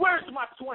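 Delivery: mock snapping, losing it, high and heated. Retelling a dispute over money he was owed, imitating himself going nuts. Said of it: "I went nuts".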